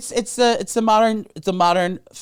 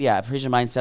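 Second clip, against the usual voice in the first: plain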